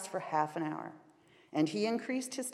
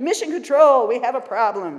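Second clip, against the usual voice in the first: very loud, high-pitched yelled call; 5 semitones higher, 13 dB louder than usual. Narrator reads a 7-year-old calling from his pretend space capsule: shouting. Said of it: "he shouted".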